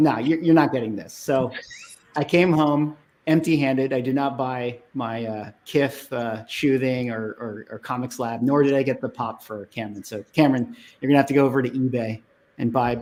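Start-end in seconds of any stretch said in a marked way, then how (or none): 0.0-1.1 put-on smug voice. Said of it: "this super smug smirk".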